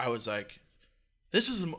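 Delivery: ordinary talk, nothing marked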